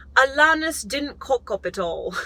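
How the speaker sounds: put-on British accent. Reading a passage aloud, trying it out: put-on British accent. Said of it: "I feel like I should read this with a British accent. All right, let's try this".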